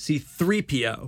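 the word "three" given heavy emphasis. Correcting how to say C-3PO: stress on three in C-3PO. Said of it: "That's not how you say it, though. So the accent is on 3".

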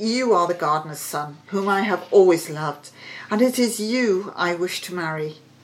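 plain reading voice

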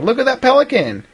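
put-on excited kid voice, high with wide pitch range.

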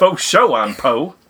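put-on Southern accent. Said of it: "making fun of the South accent".

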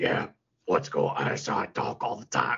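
low hero voice with rural Southern drawl. Retelling how he talks through the whole show, in a redneck Batman voice. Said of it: "the redneck Batman voice that he's doing".

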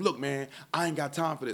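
yelling with attitude. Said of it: "started yelling at me".

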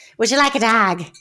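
put-on Irish accent. Quoting a film line about a dog: Brad Pitt impression. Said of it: "Brad Pitt keeps trying to give people a dog".

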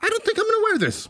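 squeaky little voice, very high. Imitating own past words about wearing a jock strap: voice of a football player. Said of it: "That's the voice of someone playing football?".

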